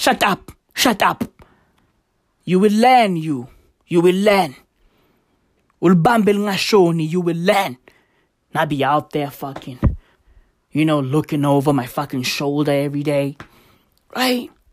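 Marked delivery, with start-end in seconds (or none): 0.0-7.8 mock menacing, threatening voice. Imitating a political party member threatening a clever outsider: imitating a threatening party member. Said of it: "They'd be like".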